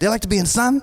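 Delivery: put-on keyboard warrior accent.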